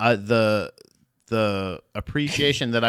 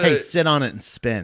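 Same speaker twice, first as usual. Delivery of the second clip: plain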